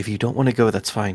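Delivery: whispering in character. Pulling a character close in a game scene: whispering in character. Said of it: "pull her close to whisper to Annie".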